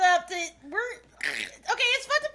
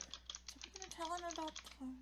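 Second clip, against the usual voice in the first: hushed, very quiet whisper, barely voiced at all; 3 semitones lower, 22 dB quieter than usual. Voicing Celine as she walks over to Chuck: quiet. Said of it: "quietly is like".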